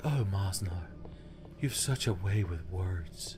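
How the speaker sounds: soft breathy female voice. Riffing on a joke romance, a large man voices the woman's reply in breathy Alice from Superjail voice. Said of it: "My breathy woman voice".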